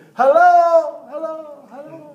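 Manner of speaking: very loud, high yell projected to the back. Speaker calling out to people sitting in the back: yelling to the back rows. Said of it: "I'm yelling to the rafters back there".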